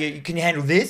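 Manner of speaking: ordinary talk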